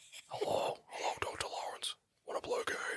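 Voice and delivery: breathy whisper in a horror-villain voice. Trying the Saw impression again: impression of the Saw villain. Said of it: "I can do it better".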